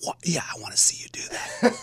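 mock whispered yelling. Telling listeners about an argument during a movie, retelling a whisper-yell. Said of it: "You were having a whisper fight".

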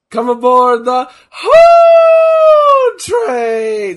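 high, slow, loud shout with voice cracking. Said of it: "my voice is cracking".

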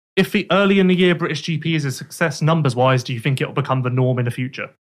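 ordinary talk, nothing marked

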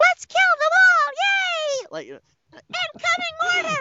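silly put-on voice. Speaker imagines trying out for God of War, doing a put-on voice. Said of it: "I like doing this voice and saying horribly vulgar things in it".

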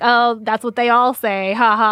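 loud, mocking taunting tone with a laugh.

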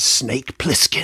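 gravelly, raspy near-whisper. Naming a movie character in a quiz, the speaker says it in a Snake Plissken gravelly whisper. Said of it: "You have to say it like that as well".

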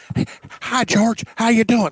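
wild, crazy-sounding man's voice. Talking about a player they want on the show: imitating a guy's crazy voice. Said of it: "He's got a crazy voice too".

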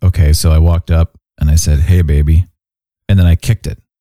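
very low, flat, expressionless deadpan delivery. Imitating a deadpan comedian telling a joke: deadpan Steven Wright impression. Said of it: "Stephen Wright's like".

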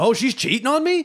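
put-on, shrill, high, angry, disbelieving outburst. Retelling how a character reacts in the comics: imitating an angry reaction. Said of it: "he gets all pissed off and is like".

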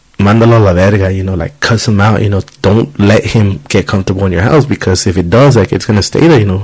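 ordinary talk, nothing marked

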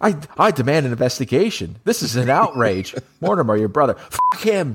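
high-pitched, crazed, ranting outburst, raving wildly. Quoting a film line with Don Ameche going crazy. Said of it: "it is Don Ameche going crazy".

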